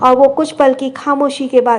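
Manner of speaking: ordinary delivery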